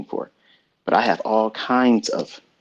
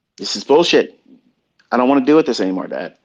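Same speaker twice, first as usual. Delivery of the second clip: mock fed-up, loud, fast, angry complaining rant; 3 semitones higher, 5 dB louder than usual. Father retells his son coming home fed up with customer service, imitating an angry son. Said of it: "He's coming home and mad sometimes".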